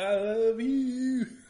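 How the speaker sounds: put-on drunken shouting. Picturing standing outside a girlfriend's trailer, drunk yelling at top of lungs. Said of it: "drunk, yelling at the top of your lungs".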